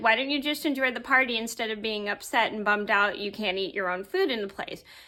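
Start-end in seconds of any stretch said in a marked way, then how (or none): none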